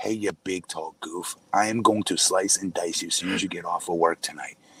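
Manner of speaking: whispering close. Speaker acting out what a short guy says to a big tall goof, whispering in his ear. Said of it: "And he whispers in your ear".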